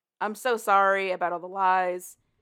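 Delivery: ordinary talk, nothing marked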